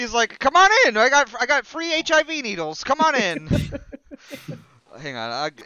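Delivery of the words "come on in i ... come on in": very high, very loud carnival barker spiel. Mocking how a man looks by playing him in a carnival barker voice. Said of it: "a carnival barker".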